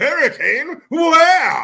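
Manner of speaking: shrill, very high, loud, blaring, oblivious rich voice.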